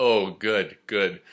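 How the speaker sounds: mock sarcastic, insincere approving tone. Retelling a laughing reply about someone reading Jung: imitating a sarcastic reply.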